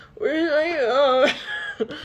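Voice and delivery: high fake-drunk slur, "my" drawn out. Retelling how he asked for his phone: imitating fake drunk slurring. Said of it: "he's pretending to be more drunk".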